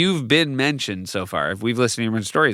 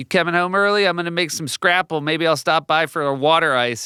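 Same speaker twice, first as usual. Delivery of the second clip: put-on overplayed Philadelphia accent at a raised pitch; 6 semitones higher than usual. Retelling a line from the show Task: imitating Mark Ruffalo's Philly accent. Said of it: "they're dining out on that Philly accent".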